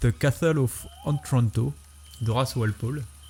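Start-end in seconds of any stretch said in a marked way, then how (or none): 0.0-1.7 slow, put-on English accent. Naming a Gothic novel's title in French talk, with a put-on English accent. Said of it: "je vais sortir mon plus bel accent anglais".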